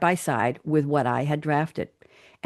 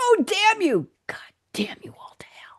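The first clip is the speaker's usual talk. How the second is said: whispered, slightly higher pitch. Reading a film quote aloud with profanity: whispering. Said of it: "I had to whisper that".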